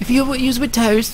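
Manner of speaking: high, eager, gushing enthusiastic fan voice.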